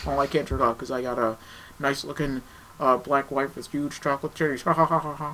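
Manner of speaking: high put-on voice that ends with a laugh. Joking about a film director's wealth and wife: George Lucas impression. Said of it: "That's my George Lucas impression".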